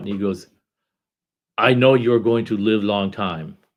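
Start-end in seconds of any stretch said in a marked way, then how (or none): 1.6-3.5 louder put-on German-accented voice. Retelling what a man said to him, speaking in a German accent. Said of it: "German accent".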